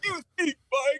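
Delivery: very high, shrill screaming yell. Retelling screaming at mike over a run-up score, retelling a scream. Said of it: "and I'm just screaming at him".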